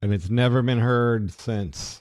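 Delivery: slow, dry sarcastic delivery.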